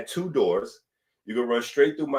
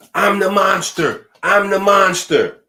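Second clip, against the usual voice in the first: put-on high, very loud child voice yelling at full blast; 8 semitones higher, 9 dB louder than usual. Telling a story about kids running through the house, the speaker is imitating Kylie yelling. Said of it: "Kylie is yelling out".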